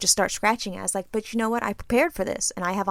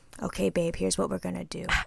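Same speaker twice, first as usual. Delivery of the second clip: soft, hushed half-whisper under the breath; 6 dB quieter than usual. Retelling what a partner half-whispered to start a plan: imitating someone half-whispering. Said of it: "he was already whispering to me".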